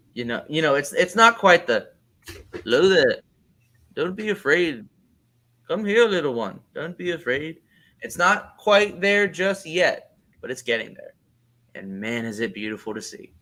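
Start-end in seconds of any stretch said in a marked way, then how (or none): 2.5-7.6 reassuring, coaxing wise-mentor delivery. Comparing an actor's slowed speech to Alec Guinness: slow Alec Guinness cadence. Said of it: "bridging that gap even further to Alec Guinness when he talks".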